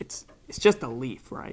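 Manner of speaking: very quiet, hushed, breathy, secretive whisper. Retelling a boy leaning close to ask: imitating a real quiet voice. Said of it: "with the way that he leaned in".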